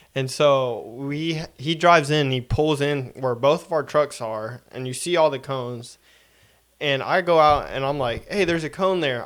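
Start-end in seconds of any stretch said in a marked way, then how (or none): 8.3-9.3 put-on calling across, calling-out voice. Retelling calling out to a driver pulling in by the coned-off pumps, saying it loudly. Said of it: "I say it loud so he can hear".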